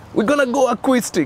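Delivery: high, shouted, mock bold announcer-like call. Pastor retelling how Sean shouted to the police officers, retelling a shout. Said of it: "Sean shouted".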